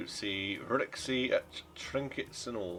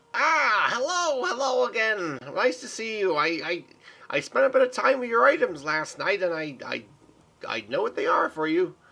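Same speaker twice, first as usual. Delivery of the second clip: put-on goblin voice, much higher, louder; 9 semitones higher, 7 dB louder than usual. The storyteller voices Rixie greeting the players as they enter, little goblin lady voice. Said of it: "It's the little goblin lady with the top hat".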